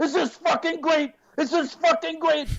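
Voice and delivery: very high, all-out thrilled, enthusiastic screaming. Retelling an actor grabbing him on set: imitating Tom Cruise screaming. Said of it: "he screams at me".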